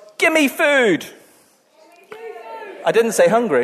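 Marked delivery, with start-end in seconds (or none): 0.2-1.1 all-out, loud, high-pitched shout. Showing the congregation what to shout when hearing hungry: shouting. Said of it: "you have to shout".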